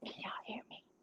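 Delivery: soft, hushed whisper. Showing a craft project and checking others can hear: whispering. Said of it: "I have to whisper".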